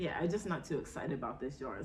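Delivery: ordinary delivery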